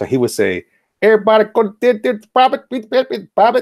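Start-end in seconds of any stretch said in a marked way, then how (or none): 1.0-3.6 put-on heavy Filipino accent, very high and loud. Imitating the platoon's Filipino drill sergeant, in a very thick Filipino accent. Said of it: "he had a very very thick accent".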